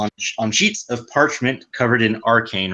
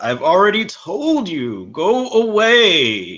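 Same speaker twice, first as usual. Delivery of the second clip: put-on high, swooping old man voice, drawing out away; 7 semitones higher, 3 dB louder than usual. A voice from within answers the knocking at the door, in an old man voice. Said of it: "Did it sound like an old man?".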